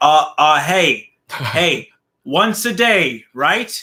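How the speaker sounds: very slow, loud, stumbling, halting delivery. Imitating Barrett calling up and saying they should talk daily: Barrett impression. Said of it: "That's my Barrett impression".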